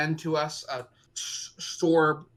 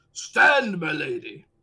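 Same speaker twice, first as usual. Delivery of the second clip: deliberately gruff, heavy, loud voice; 5 dB louder than usual. Asking the game master how the king sounds: gruff Reinhardt voice. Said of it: "gruff voice like".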